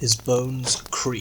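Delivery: plain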